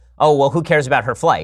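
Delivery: ordinary talk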